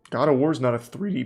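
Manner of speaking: voice breaking mid-word on "three D". Speaker arguing about 3d platformers in games, voice cracking. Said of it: "voice crack".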